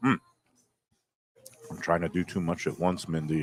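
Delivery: talking with mouth full. Tasting a dish while someone feeds them: talking with mouth full. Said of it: "I'm eating with my mouth full".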